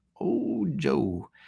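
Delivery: put-on old Southerner's voice, soft and creaky. Joking about himself in a conversation, in a mock old southern voice. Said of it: "I sound like I'm a old Southern".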